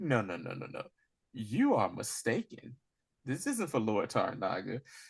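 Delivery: condescending, matter-of-fact tone. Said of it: "condescending with her insults".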